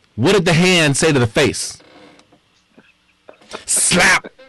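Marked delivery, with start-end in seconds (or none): none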